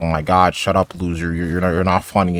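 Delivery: normal talking voice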